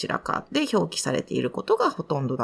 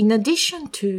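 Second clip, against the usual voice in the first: addition stressed, read a bit stronger; 7 semitones higher, 4 dB louder than usual. Explaining how to read the phrase in addition to: stress on addition. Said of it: "addition っていうところをちょっと強く読む".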